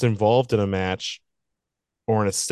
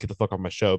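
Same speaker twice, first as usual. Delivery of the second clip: ordinary delivery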